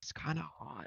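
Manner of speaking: hushed, private, confiding whisper. Temperance leans toward Theodora and says it, whispering. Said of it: "a whisper".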